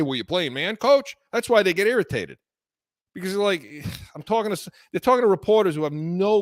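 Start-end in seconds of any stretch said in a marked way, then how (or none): none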